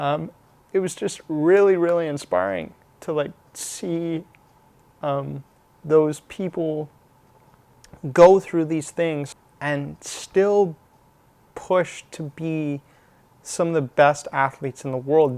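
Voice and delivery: voice catching, choked up with emotion. Talking about athletes who overcame severe injuries, getting choked up. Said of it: "I'm getting a little choked up here".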